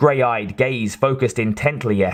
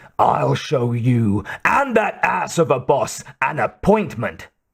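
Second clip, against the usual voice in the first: angry, menacing growl forced through the throat. A red-faced sergeant answers a woman offering him an appointment; low growl. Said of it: "he growled low in his throat".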